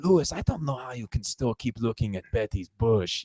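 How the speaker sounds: exaggerated, over-the-top, hammed-up Japanese accent. Speaker recounting a scene, quoting the Japanese guy talking to Lewis, exaggerated Japanese accent. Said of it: "like in an exaggerated Japanese accent".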